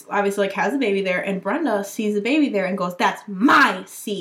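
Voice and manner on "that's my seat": loud, aggressive, confrontational shout. Retelling how Brenda claimed a seat near the sister's baby: imitating Brenda's aggressive yell. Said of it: "A grown woman is yelling with a baby near, aggressively".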